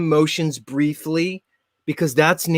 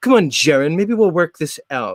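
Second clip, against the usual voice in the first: put-on haughty British accent. Talking to the other speaker, the speaker does a put-on haughty British accent. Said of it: "I'm a haughty British guy".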